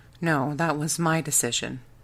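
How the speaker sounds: plain reading voice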